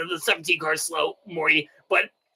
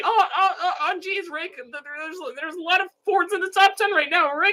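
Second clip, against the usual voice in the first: very high, stammering cartoon voice; 12 semitones higher than usual. Talking race standings, doing the Rick and Morty voices: Rick voice. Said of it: "the Rick and Morty voices".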